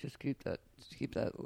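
low, quiet voice.

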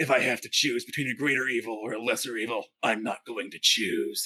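tentative video game hero voice, not quite landing. Sharing a bit from the games, attempting a Geralt of Rivia impression. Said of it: "I'm trying to do Geralt of Rivia".

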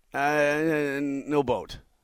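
mock stammering, imitated stutter. Retelling how a road-trip companion answered when everyone was worn out, imitating a stutter. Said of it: "he basically stuttered".

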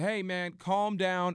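mock screaming. Recounting calling out to someone through his door, retelling a scream through the door. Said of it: "I'm screaming through my door".

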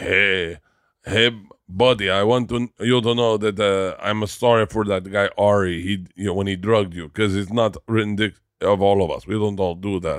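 attempted Israeli accent. Retell what one guy said at Kuya yesterday, trying a put-on Israeli accent. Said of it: "I'm trying to do an Israeli accent".

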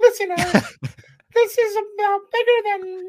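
squeaked out, high-pitched and slow. Speaking to Eric, Mickey Mouse voice. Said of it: "That's your Mickey Mouse voice".

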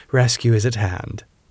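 ordinary talk

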